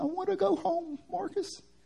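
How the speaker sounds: put-on thick Southern accent, very high pitch. Speaker retelling a phone call with his crying little sister, imitating Taylor's deep Southern accent. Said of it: "She's got like a deep southern accent".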